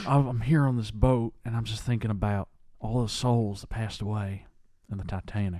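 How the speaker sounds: stumbling, halting delivery, thinking aloud. Retelling a documentary, impersonating its rambling subject: Bill Paxton impression. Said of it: "That's not a bad impression".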